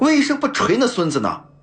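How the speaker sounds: loud complaining voice. Having jumped down from the kang and walked over, a character is loudly complaining. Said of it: "大声怨怪道".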